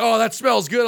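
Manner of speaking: ordinary talk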